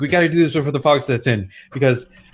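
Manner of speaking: super fast, rattled-off delivery. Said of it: "just speaking super fast".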